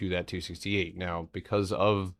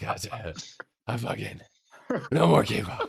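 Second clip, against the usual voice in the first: mock worn-out exasperation, higher pitch; 4 semitones higher, 3 dB louder than usual. Imitating another speaker fed up with a kids' show: imitating someone worn out. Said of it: "how worn out he is".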